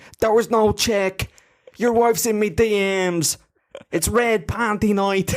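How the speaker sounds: high, slow, swaggering Irish trash-talking fighter voice. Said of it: "flashbacks to, you know, Conor McGregor".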